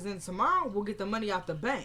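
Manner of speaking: ordinary delivery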